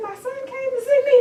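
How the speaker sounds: high, loud, excited exclamation.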